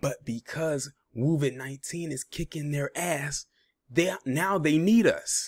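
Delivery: hushed whisper. Speaker lowers to a whisper so they won't hear: whispering. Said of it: "I'm whispering because I don't want them to hear me".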